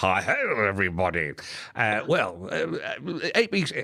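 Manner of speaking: slow voice with mouth crammed, cheeks stuffed. Impersonating a man who had the speaker on his program, talking with stuffed cheeks. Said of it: "I won't do that because that's his shtick".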